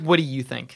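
very aggressive, hostile, combative tone. Retelling to the group what Grayson asked, in a very aggressive tone. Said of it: "In a very aggressive tone".

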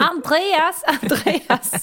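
Swedish Skåne accent, high and loud. Speaker pretends the listener talks Skåne dialect and calls out; pretend Skåne accent. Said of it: "vi låtsas att du pratar skånska".

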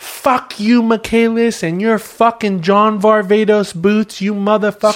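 furious yelling. Retelling a group meeting where a guy goes off: imitating an angry outburst. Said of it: "the guy goes off".

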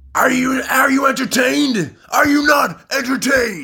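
very high, loud shout. Retelling a film scene, looking up at the crowd: imitating a shout. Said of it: "looks up to the crowd and shouts".

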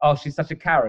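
ordinary delivery

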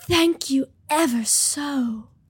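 breathy, very slow, drawn-out put-on voice. Asked to show it, speaker gives a Marilyn Monroe impression. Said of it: "I can do a Marilyn Monroe impression".

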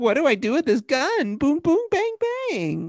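very high, swooping, sing-song cartoon voice. Retelling a TV undercover agent's lines: imitating the undercover agent's voice. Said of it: "she talks like this the whole time".

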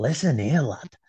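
put-on whisper. Imagining Mark Fotheringham outside at night, whispering in your ear: Mark Fotheringham whispering. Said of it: "Like whispering in my ear".

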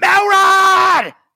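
very loud, shrill, furious bellowing yell. Showing a name that sounds good yelled angrily, mock-angry yell of melrod. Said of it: "Melrod is such a good name to yell in an angry voice".

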